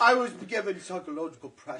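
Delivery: put-on British accent. Mimicking british people being quoted in the news, british accent. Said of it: "That sounds so British".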